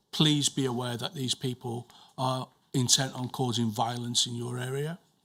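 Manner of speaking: ordinary delivery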